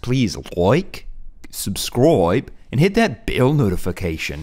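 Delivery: loud, put-on Australian accent. Ending a video with a message to viewers, in an Australian accent. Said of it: "the best Australian accent I've ever done".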